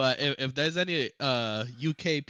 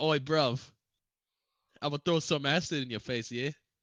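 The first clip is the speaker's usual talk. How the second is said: put-on British accent. Answering which accent to worry about, doing a put-on british accent. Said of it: "Like that one?".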